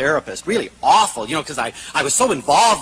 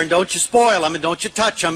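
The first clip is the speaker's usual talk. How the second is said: ordinary delivery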